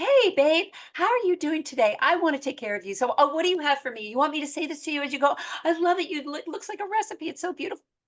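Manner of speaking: warm, gushing, effusive, chatty friendliness. Retelling what a woman said to the speaker's friend, imitating warm effusive chatter. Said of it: "Chatty Cathy, warmth, effusive".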